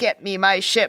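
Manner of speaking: normal talking voice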